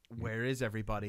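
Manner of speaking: ordinary delivery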